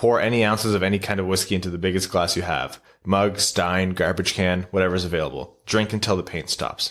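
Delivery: ordinary delivery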